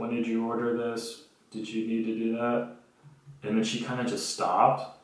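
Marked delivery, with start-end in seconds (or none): 0.0-2.6 soft, hushed half-whisper. Retelling what a call center agent said on the phone: imitating someone half-whispering. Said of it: "was whispering, like".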